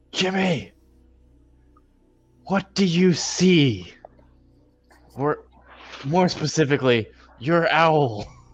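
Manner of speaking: very high yell called across a field. A player's character calls across the battlefield to Jimmy, shouting across to Jimmy. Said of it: "I just want to shout towards Jimmy".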